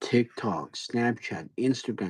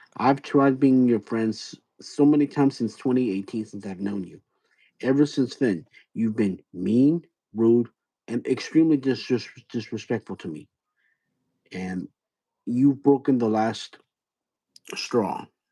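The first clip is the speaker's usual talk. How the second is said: slow, grave, stern, firm scolding. Confronting someone who has been mean and rude to them for years, serious and stern. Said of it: "I'm being very serious and stern with you".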